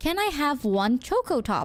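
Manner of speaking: ordinary talk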